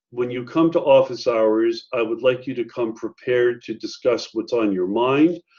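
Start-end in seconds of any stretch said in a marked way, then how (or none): none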